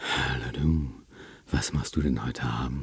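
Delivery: breathy, intimate voice.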